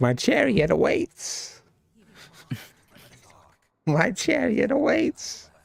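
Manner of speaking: very high, slow, creaky voice, drawn out. Voicing a cat that looks like Rumpelstiltskin: Rumpelstiltskin voice. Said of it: "That cat looks like the Rumpelstiltskin in the movie".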